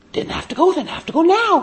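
put-on high whiny little boy voice.

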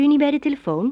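warm, kindly tone. Reading a story, a woman at the telephone asks a child a question, kindly, friendly. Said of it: "Vroeg ze vriendelijk".

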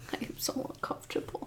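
fast, breathless, uncomfortable whisper.

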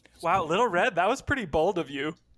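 plain

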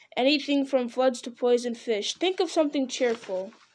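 ordinary delivery

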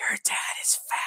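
loud, breathy stage whisper, plainly audible. Retelling what a girl in class said about a dad: imitating a loud whisper. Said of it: "whispering, but it was not quiet".

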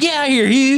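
bossy Southern belle voice, very high pitched. Retelling a scene the family watched together, imitating a southern belle. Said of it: "something about how she says it".

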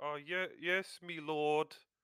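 voice in disguise. Halfdan answers the man with the truncheon, in a disguised voice. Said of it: "Halfdan will try to disguise his voice".

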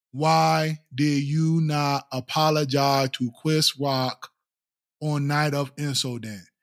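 slow, stiff, wooden, scripted-sounding reading. Mocking how Will Smith reads a fan question aloud: imitating Will Smith reading stiffly. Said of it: "And he's reading them like".

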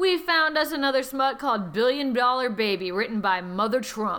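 ordinary talk, nothing marked

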